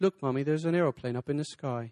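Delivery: put-on British accent, child's voice. Imagining asking a british kid to say a line, in a british child's voice. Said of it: "you hear somebody with a British voice".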